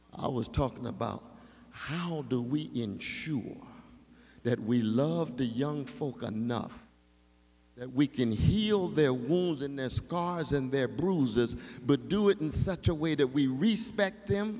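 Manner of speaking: slow, deliberate, carefully paced, spelled-out speech. Starting over for a sister who couldn't hear: speaking more slowly. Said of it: "I'm gonna speak more slowly for my sister".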